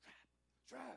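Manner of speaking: very high, loud whisper-shout, called out. Retelling someone yelling across the street, in a loud whisper. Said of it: "Whisper voice".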